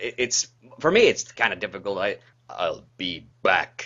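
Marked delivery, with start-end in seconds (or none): 2.5-3.9 much lower pitched voice. Discussing how to say a famous line, the speaker tries it, pitched low. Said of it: "the trick with "I'll be back" is like getting it low enough".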